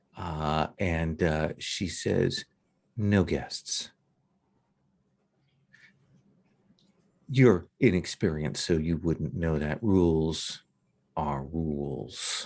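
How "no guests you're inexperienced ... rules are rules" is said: icy, cold, cutting tone. Voicing the student council president turning guests away: cold, cutting voice. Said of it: "she says it in such a cold way".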